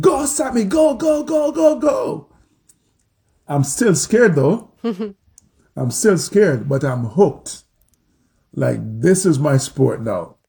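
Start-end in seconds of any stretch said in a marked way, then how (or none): 0.0-2.3 put-on very high, drawn-out, full-lunged cowboy holler. Recalling their third run that first evening, the speaker is retelling shouting at the top of their lungs. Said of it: "I'm shouting at the top of my lungs".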